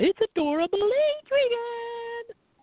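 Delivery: very high, shrill squeak, name drawn out. Recalling Jimmy Hart managing Adrian Adonis: squeaky Jimmy Hart voice. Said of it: "with the squeaky voice".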